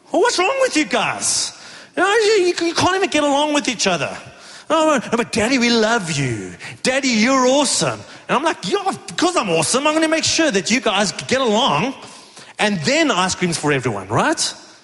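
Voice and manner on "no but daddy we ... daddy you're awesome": coaxing, sugary, sing-song sweet-talking. A father retells his kids answering him after he refused them, imitating his kids. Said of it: "our kids are just fighting".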